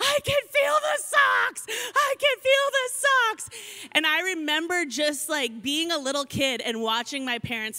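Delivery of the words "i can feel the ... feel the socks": put-on very high, screaming, sobbing wail. Retelling a childhood meltdown over socks, imitating sobbing and screaming. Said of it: "I am sobbing, I am screaming".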